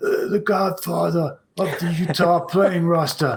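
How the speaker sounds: fake hoarse, rasping voice. Speaker introducing a player from Salt Lake, in a put-on raspy voice. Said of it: "I'm going to have to put on my raspy voice".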